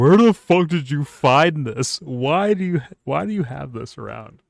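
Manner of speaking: acted words cracking through helpless, high, loud laughter. Retelling Joe Rogan's reaction to a funny video: imitating Joe Rogan crying laughing. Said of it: "He's, like, crying".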